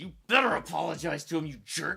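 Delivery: mock-grumbly, grumbling voice. Recalling what they said out loud during a movie scene, retelling in a grumbly voice. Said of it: "I even said this out loud in a grumbly voice".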